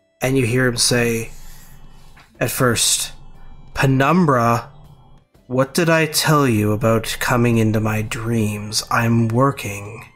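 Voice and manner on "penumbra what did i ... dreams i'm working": soothing, calm angelic voice. Voicing the player's father speaking in a dream: soothing angelic voice. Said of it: "his voice is soothing and angelic".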